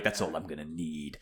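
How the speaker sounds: tough, badass action-hero style delivery. Voicing a game character who is acting like a real badass: badass Harry voice. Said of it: "Harry's been a real badass".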